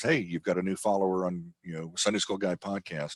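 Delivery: ordinary talk, nothing marked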